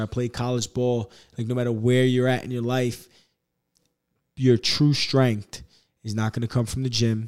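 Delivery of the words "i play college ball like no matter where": ordinary delivery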